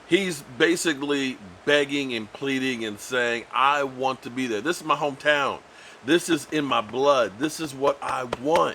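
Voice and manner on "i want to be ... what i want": usual speaking voice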